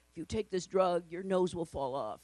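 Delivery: low, small background voice tucked underneath. Mocking the voice-over in drug commercials, in a low little voice. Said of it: "like in this low little voice underneath".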